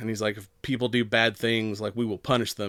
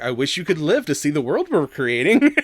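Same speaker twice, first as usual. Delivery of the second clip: calm, serene, deeply creepy voice, swooping pitch; 4 semitones higher, 4 dB louder than usual. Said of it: "he's just, like, legit creepy".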